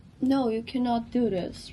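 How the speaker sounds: ordinary talk, nothing marked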